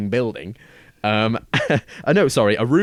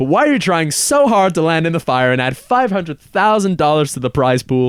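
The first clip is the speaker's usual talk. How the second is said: loud, high-pitched, badly done American accent; 5 semitones higher, 5 dB louder than usual. Retelling a video, quoting a question MrBeast asks a stuntman, in a terrible American accent. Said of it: "terrible American accent from me is incoming".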